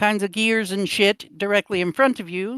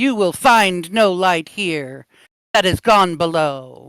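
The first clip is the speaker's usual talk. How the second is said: big, booming, hollered voice; 4 dB louder than usual. Narrating a scene, voicing someone hollering from across the room: booming voice. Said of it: "a booming voice hollers at you".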